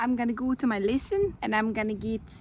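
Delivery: put-on New Zealand accent. After the accents are being guessed, the speaker says Kiwi and speaks in a New Zealand accent.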